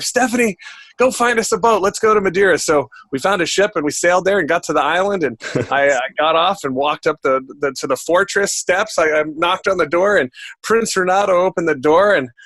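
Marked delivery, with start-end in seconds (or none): 0.0-2.6 mock raised, pitched-up called-out yell. Telling a story, re-enacting calling over to their wife; retelling own yell. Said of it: "I yell over to my wife".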